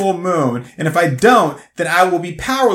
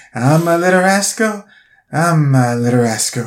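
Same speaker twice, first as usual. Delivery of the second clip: put-on very slow, dragged-out old-woman voice; 2 semitones lower than usual. Mocking an old woman in a commercial who took forever with her line. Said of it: "a fucking hour to get that line out".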